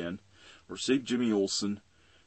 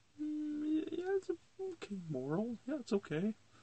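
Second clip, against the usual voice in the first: high, far-off, unimpressed, shrugging-off tone. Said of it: "I'm like".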